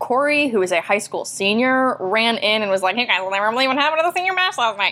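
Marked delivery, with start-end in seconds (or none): 2.9-4.9 rushed, deliberately irritating, really annoying voice. Retelling how a high school senior ran into the meeting, doing Corey's annoying voice. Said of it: "he had a really annoying voice".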